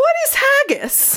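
very high, thick, full-on Scottish brogue. Quoting a man's question, in a thick Scottish accent. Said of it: "with a full-ass Scottish accent says".

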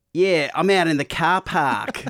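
high, loud put-on Australian kid accent. Recalling kids who picked up Australian accents, imitating one in an Australian accent. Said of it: "some of the kids would pick up Australian accents".

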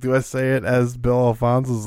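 ordinary delivery

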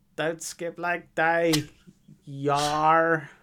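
pirate-like fake Australian accent. Repeating the catchphrase, teased for sounding like a pirate: bad Australian accent sounding like a pirate. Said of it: "He's Australian, not a fucking pirate".

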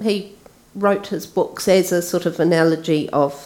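ordinary delivery

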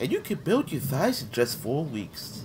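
soft, breathy, whispered infomercial announcer voice. Describing someone's character voice by demonstrating an infomercial voice. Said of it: "That kind of voice".

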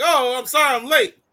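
put-on Latin accent that sounds Peruvian. Retelling a character arriving over a hill: imitating a Peruvian accent. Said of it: "I guess it's a Peruvian accent".

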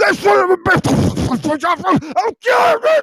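very high, climbing, drawn-out, enraged furious yell. Retelling a fight, imitating a furious friend threatening: Richard impersonation yelling angrily. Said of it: "that was a good Richard impersonation you did".

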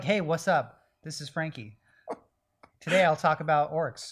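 slow, casual, laid-back slangy drawl. Retelling how a friend wrote his articles: imitating Frankie's writing voice. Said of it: "He'd be like".

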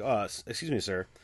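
ironic, tongue-in-cheek, mock-polite tone. Showing how the word sir gets used when talking to somebody: ironic, not serious. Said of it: "I'll say it in a not serious way. Like I'll say it ironically".

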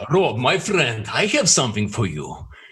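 intimidating Russian accent with swooping pitch, laid on. Asked to do the Russian Vlad character: intimidating Russian Vlad voice. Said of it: "Do your Russian Vlad. Speak in Russian. Do intimidating".

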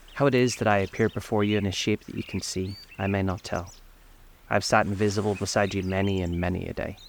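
ordinary delivery

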